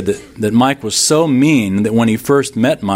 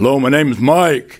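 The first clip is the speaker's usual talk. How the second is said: mild, light hint of a scary bass voice; 3 semitones higher than usual. Imitating a friend named Mike who had a bass voice: imitating a loud, low, frightening bass voice. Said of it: "Real loud, low, and frightening".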